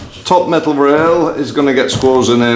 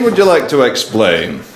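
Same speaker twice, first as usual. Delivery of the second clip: ordinary talk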